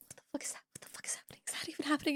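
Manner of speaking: fast, frightened, hushed, whispered muttering. Describing a woman hiding around a corner; acting out a whisper to herself. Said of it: "It's just like whispering to herself".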